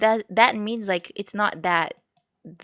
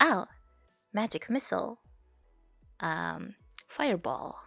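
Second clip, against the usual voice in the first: put-on American accent with swooping pitch; 8 dB quieter than usual. Retelling casting spells in a game with an American accent. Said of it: "when I change it to the American accent".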